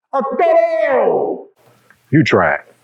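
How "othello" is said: loud, higher-pitched scream. Showing how to scream loudly in an empty theater: screaming a name. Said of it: "you can scream as loud as you want, like this".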